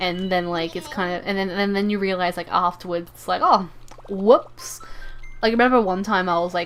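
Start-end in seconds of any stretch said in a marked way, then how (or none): none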